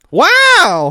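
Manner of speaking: very high, very loud, drawn-out excited wow. Redoing the wow after being called lackluster: livelier wow. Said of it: "that's way better".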